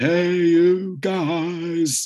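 play-acted very high bellow, "guys" drawn out. Quoting a famous line from The Goonies, Sloth bellowing. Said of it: "when he bellows".

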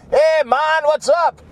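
attempted Mexican accent that comes out Jamaican. Speaker gives their overwatered cactus a voice, in a Mexican accent that came out Jamaican. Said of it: "that was my Mexican ... It came out Jamaican".

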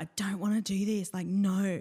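acted tearful crying voice. Recalling being dragged into an acting class by mum, reenacting own past crying. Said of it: "I was crying".

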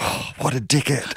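hushed, barely voiced whisper. Retelling what Billy whispered at the table: imitating Billy Connolly whispering. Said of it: "And Billy just whispered".

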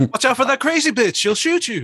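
put-on gruff action-hero voice. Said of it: "he was doing full Mark Wahlberg then".

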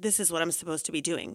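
ordinary talk

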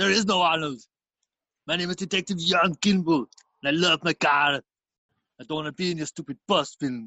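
put-on, a bit angry, cross and fed-up. Playing a made-up Arnie audition tape, Arnie gets angry: Arnold Schwarzenegger impression, angry. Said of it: "he got a bit angry at that one".

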